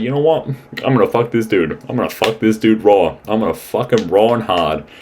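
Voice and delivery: brash, cocky, boastful declaration. Retelling a show scene as the character Hunter. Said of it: "and he goes, like".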